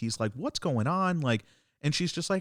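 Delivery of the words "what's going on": put-on bewildered child voice. Retelling a scene where a kid meets a witch, imitating a confused kid. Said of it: "this kid is just kind of confused".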